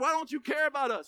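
imitated accusatory tone. Retelling how the disciples accused Jesus: imitating an accusing tone. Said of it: "So they actually accused Jesus".

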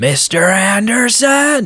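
furious shout pitched way up. Retelling a movie scene where a character yells: imitating an angry yell. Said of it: "he lets out this angry yell".

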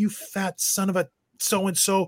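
put-on furious yell. A player recalls yelling at the other team's bench during a game: retelling a furious yell. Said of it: "I'm yelling at Randy Carlyle".

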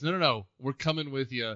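normal talking voice

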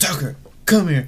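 fierce, high shout. Speaker retells calling back a dog heading for the street: retelling an aggressive yell. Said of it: "So I had to yell at him with like a aggressive voice".

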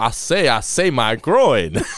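put-on cartoon rooster voice. Recalling a favorite scene of Homer attacked by security guards, Foghorn Leghorn voice. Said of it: "Pulling out his best Foghorn Leghorn voice".

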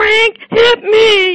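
very high, very loud, tearful crying wail. Explaining language development, the speaker acts out a child coming up crying: imitating Emily crying. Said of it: "comes up to you crying".

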